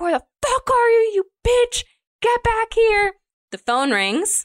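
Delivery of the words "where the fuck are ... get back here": put-on shrill, furious screaming, very high pitch. Recounting a scene, acting out Billy shouting for her to come back; imitating Billy screaming. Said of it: "Like he's like screaming".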